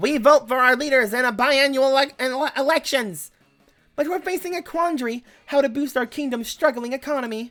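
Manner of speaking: tiny, small put-on voice. Speaker voicing a tiny voice from the city, in a tiny voice. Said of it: "A tiny voice from the city says".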